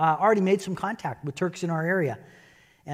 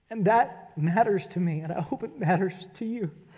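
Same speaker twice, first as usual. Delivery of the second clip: soft voice with emotion welling up; 3 semitones higher, 8 dB quieter than usual. Speaking about sharing the gospel of love, getting really emotional. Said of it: "I'm getting really emotional".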